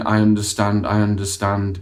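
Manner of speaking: mechanical, emotionless, flat robotic monotone drone. Demonstrating a reply that fails to show empathy; monotone, robotic voice. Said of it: "in a really monotone, robotic voice".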